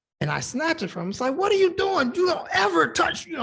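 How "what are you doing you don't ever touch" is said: much higher, louder angry outburst. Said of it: "I was getting mad".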